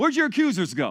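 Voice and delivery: biting, caustic jab with a hint of frustration. Retelling what he said to her, acting caustic and slightly frustrated. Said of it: "almost a caustic, almost, you know, just this, this, this hint of, of just frustration".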